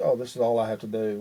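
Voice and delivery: ordinary talk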